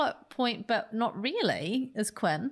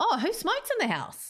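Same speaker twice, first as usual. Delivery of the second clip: startled, surprised, curious voice with inquisitive lilt; 9 semitones higher than usual. Act out how she said it in a conversation, imitating someone's sudden-discovery question. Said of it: "Kind of like that intonation".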